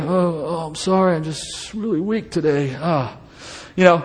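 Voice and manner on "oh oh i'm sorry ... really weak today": soft, slow, frail, put-on, falsely humble voice. Acting out a fasting Pharisee greeted in the street: put-on weak fake humility. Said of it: "All that fake humility".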